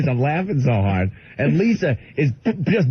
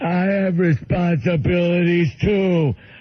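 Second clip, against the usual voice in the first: higher-pitched, slow, simple-minded voice. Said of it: "And Bill goes".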